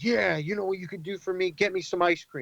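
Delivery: mock very angry, high-pitched voice. Retelling what an angry man said when offered help: imitating an angry demand. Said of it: "very angry".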